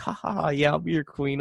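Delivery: ordinary talk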